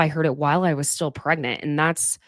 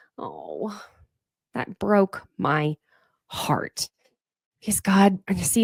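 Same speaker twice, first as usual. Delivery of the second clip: tearful voice, higher; 3 semitones higher, 3 dB quieter than usual. Reacting to a sad story about infertility, crying while talking. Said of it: "look at me crying".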